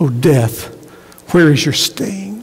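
half-jeering, taunting tone. Reading a scripture passage aloud, the speaker says this in an almost mocking tone. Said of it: "almost in a mocking tone".

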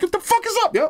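very high, challenging tough-guy voice. Retelling rolling his car window down at a man, put-on high voice. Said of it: "I had to take it to the high voice".

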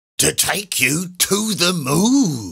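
high, slow, drawn-out cry lingering on "moon". Mr. Twit answers Mrs. Twit as she goes ballooning up, exclaiming. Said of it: "exclaimed Mr".

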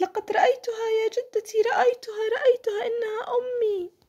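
thrilled, shrill, high-pitched excited shout. A narrator reads a granddaughter calling to her grandmother on the beach, shouting excitedly. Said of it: "فصاحت".

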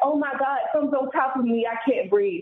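acted, high-pitched scream. Retelling how a husband screamed in his sleep: imitating someone screaming. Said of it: "he just starts screaming".

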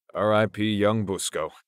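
ordinary delivery

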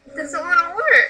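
high, exasperated, fed-up grumble. Reacting when something doesn't want to work: frustrated. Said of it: "That was me getting frustrated".

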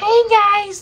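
put-on very high, childish little-kid voice. A reviewer explains his voice changes across videos, demonstrating a kid-like voice. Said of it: "like a really kid-like voice".

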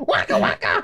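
little cartoon toad character voice. Asked by another speaker for a Toad impression: Toad impression. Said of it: "That's my toad".

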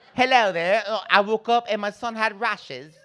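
high-pitched put-on British accent. Show how your cousin talks since she married and moved to England: cousin Alicia's English way of talking. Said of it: "Now she talks like this".

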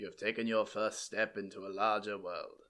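low, hushed, soft wise-mentor voice. Rambling before starting something new, speaker quotes Star Wars, doing a Ben Kenobi impression. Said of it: "It's my Ben Kenobi voice".

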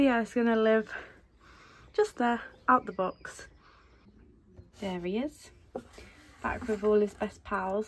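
breathless, winded speech. Unboxing a figure after running up the stairs, out of breath. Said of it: "I'm out of breath because I just decided to run up the stairs".

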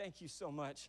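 acted, overwhelmed, near-tearful voice. Retelling a stranger's reply on getting his lost phone back: imitating someone near tears. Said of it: "almost to the point of tears".

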